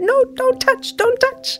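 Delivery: high-pitched, furious, angry voice. Retelling how a sister reacted to a tap on the arm: imitating someone furious. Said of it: "she got so furious".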